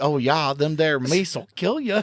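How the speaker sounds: imitated Fargo accent. Joining in as the other speaker struggles with the accent: put-on Fargo accent. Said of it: "I can't do the accent now".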